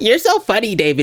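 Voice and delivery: over-the-top, obnoxious, high fake girly gushing. Retelling how Andrew fake-laughed at the speaker's jokes, imitating Andrew's fake girly voice. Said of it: "in the most obnoxious, fake, girly voice".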